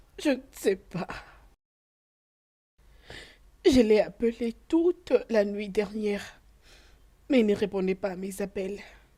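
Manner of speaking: tearful, crying while talking. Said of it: "arrête de pleurer".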